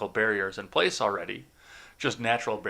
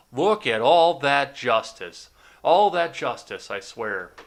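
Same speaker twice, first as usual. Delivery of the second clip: heavy, very loud, drawn-out sarcastic delivery; 3 semitones higher, 8 dB louder than usual. Retelling what a driver passing by said: imitating a sarcastic remark. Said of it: "I heard the sarcasm in his voice".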